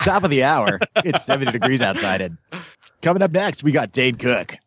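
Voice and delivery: put-on radio DJ announcer patter. On their radio show, demonstrating what a puker voice sounds like. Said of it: "talk like this".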